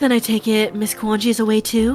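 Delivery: motherly mommy voice. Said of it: "Can you do your best, a mommy voice?".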